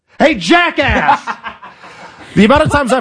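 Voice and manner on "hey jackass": angry, thrown-out, half-hearted anger. Coaching someone to yell at a Chipotle worker, the speaker demonstrates a mock-angry yell. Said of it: "Yell at the Chipotle worker like you yell at me".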